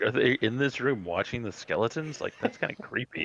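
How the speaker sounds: ordinary delivery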